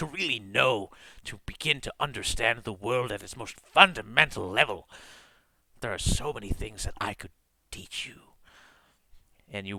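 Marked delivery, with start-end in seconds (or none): 0.0-8.2 eerie, unnatural altered voice, quieter. Voicing a disguised creature tempting the party: strange, unnatural character voice. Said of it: "something in his voice that doesn't sound like the normal".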